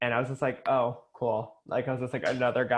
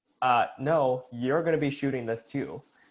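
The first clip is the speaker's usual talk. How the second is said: acted-out firm, commanding, no-nonsense authoritative dad voice. Retelling how a collaborator answered about the camera work: imitating a firm authoritative voice. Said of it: "in a very, like, like, authoritative, firm, like, dad kind of way".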